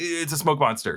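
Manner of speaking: usual speaking voice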